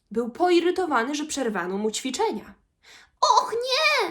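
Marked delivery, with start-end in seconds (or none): 3.2-4.2 shrill, very high-pitched voice. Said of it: "zaprotestował prosiaczek".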